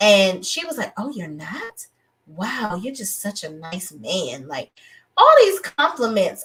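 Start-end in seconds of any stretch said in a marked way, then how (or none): 1.0-4.5 put-on flirty voice, quieter. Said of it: "in my Carisha, Carisha voice".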